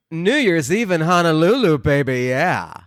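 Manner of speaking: groovy, drawling voice.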